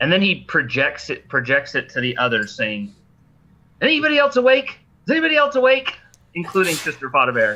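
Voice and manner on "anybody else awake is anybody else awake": very high, shouted call-out. Captured character yelling into the others' heads to find who's awake, yelling. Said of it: "there's no need to yell".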